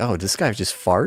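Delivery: normal talking voice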